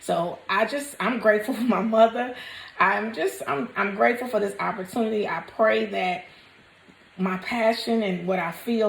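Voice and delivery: voice fighting off tears. Speaker expressing gratitude, holding back tears. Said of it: "and I'm trying not to cry".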